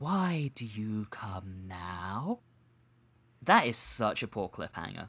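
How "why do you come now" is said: ethereal voice, each word floated out very slowly. Recapping an episode's cliffhanger, quoting the Animus: ethereal Animus voice. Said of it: "that very ethereal voice".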